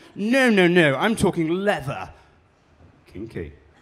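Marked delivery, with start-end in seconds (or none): 0.2-2.1 loud, drawn-out, very plummy posh voice. Speaker retells a man's reply to them, in a very plummy voice. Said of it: "hadn't got one plum in his mouth".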